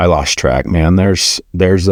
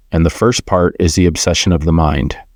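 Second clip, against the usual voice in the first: ordinary delivery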